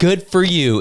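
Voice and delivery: patronizing, talking-down tone. Repeating a candidate's reply to the crowd, imitating a condescending tone. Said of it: "in a condescending tone".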